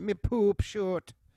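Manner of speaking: put-on Jamaican accent. Friends joking around, repeating a line while doing a Jamaican accent. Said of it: "Still doing the accent?".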